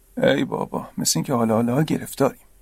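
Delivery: mumbling under breath. A man scratches his ear and mutters under his breath. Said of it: "زیر لب گفت".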